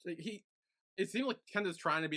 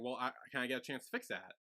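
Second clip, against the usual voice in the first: ordinary talk, nothing marked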